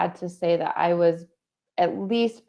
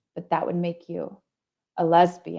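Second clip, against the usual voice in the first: put-on very serious, grave voice. A speaker recounts what their dad said to them, retelling dad's very serious voice. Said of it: "he said it with this very serious voice".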